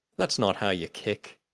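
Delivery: ordinary delivery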